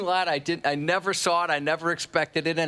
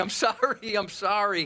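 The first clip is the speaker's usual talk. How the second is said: mock, slow, tearful voice on the verge of tears; 4 semitones higher than usual. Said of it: "starting to cry, saying".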